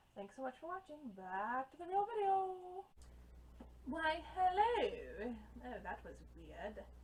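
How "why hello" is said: very bad fake British accent, high and loud. A video reviewer opens his review with a greeting in a very bad British accent. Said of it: "Very bad British accent there".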